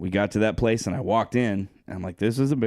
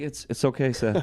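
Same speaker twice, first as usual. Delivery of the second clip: put-on terrified voice, higher; 4 semitones higher than usual. Retelling being crushed on a couch by a friend: imitating own terrified voice.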